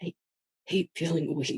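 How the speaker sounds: very soft, quiet, teary mumble under the breath. Playing a character, the speaker mutters while still tearing up: tearful muttering. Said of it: "tearing up a little, um, and kind of just like muttering".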